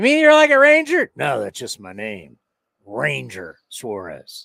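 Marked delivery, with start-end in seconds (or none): 2.9-4.5 very low, deep, slow Western drawl. Acting out someone introducing himself by name: gruff Western drawl as Ranger Suarez. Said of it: "I don't know why I'm doing that voice".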